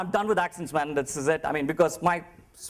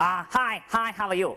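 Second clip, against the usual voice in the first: put-on Chinese-accented speech; 4 semitones higher than usual. Retelling a greeting from a Chinese lady: imitating a Chinese lady. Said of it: "this Chinese lady and she was like".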